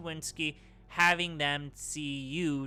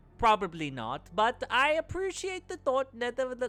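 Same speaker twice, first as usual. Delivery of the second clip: bad mixed German accent, higher pitch; 9 semitones higher than usual. Voicing a game character declining an offer of help: awful German-mix voice. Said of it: "This is an awful voice".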